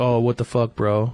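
ordinary delivery

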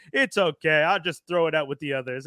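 plain

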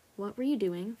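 ordinary delivery

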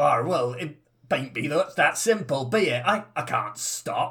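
put-on old sea-dog pirate accent, "arr" and all. A crewman, told to stop talking that way, replies; pirate accent. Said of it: "it's a pirate accent".

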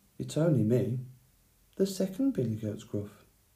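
soft-spoken. The second billy goat Gruff answers the roaring troll, in a rather soft voice. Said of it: "spoke in a rather soft voice".

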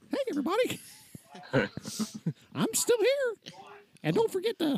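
very high, squeaky cartoon voice, pitch swooping around. Joking about how a voice in a story spoke, in Mickey Mouse voice. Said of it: "But did he say it like in the voice of Mickey Mouse?".

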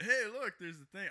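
high, loud surfer-dude voice. Speaker retells their dad's remark, making dad sound like a surfer dude. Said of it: "I make my dad sound like a surfer".

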